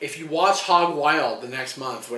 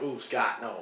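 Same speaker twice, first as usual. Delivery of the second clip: put-on Cuban accent, promo style; 3 semitones lower, 7 dB quieter than usual. Retelling a wrestler's scathing promo, imitating Scott Hall's Cuban accent. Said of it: "in that Cuban accent".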